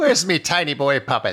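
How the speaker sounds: put-on crude over-the-top Irish accent. Acting out a priest working a puppet in a comedy scene, really racist irish accent. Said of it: "Doing a really racist Irish accent".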